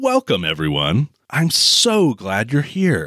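play-acted, very insincere, slow and swooping. Retelling a film host addressing the camera, imitating an insincere voice. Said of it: "in the least sincere voice possible".

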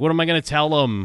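desperation in the voice. Quoting a show scene, imitating Tony's desperate voice. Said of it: "the desperation in Tony's voice".

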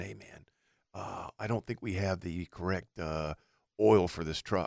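barely audible, very quiet, hushed half-whisper. Retelling what the manager said to the mechanic: retelling a half-whisper. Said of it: "So I hear him whispering".

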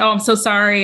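usual speaking voice

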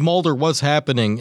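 normal talking voice

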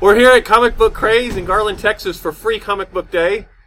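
very loud, high-pitched shout. Podcast host outdoors, opening the episode from a comic book shop: yelling. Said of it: "You don't have to yell".

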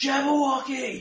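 very high, very loud, shrill, terrified scream. Voicing one voice rising above a thousand screams: terrified scream. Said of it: "one voice rises clear above the rest in sheer terror".

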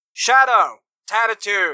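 booming guard call. A game master has a riot-gear guard step in and call names, booming guard voice. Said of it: "he booms out".

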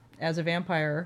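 ordinary delivery

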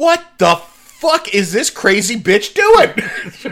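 high, indignant outburst, acted out. Recapping a tv episode, quoting a character's outburst about the captain: mock-indignant. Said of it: "Neelix gets real indignant".

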